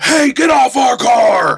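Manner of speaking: very loud, deliberate, drawn-out hollering. Voicing a roadside cultist rushing the car, yelling at a player: shouting cultist. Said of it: "one of them just shouts at you".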